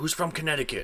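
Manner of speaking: high, screaming drill-sergeant yell. Retelling a drill sergeant's question at basic: imitating a drill sergeant screaming. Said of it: "my drill sergeant screamed out".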